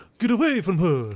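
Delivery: put-on Romanian accent. Acting out dialogue from a movie set in Romania, in a Romanian accent. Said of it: "I'm going to do my Romanian accent".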